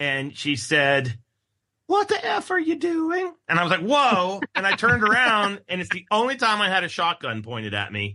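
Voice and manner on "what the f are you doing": very high, sweet, wholesome little grandma voice. Speaker recounting a woman who pointed a shotgun at them, wholesome grandma voice. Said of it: "it sounded like a Norman Rockwell grandma".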